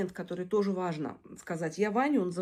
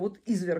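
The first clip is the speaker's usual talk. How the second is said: usual speaking voice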